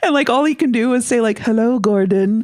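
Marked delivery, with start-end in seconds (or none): 1.4-2.4 put-on spooky ghost voice. Imagining Simon trapped in the box, calling from the hallway in a spooky voice. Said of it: "in a spooky voice".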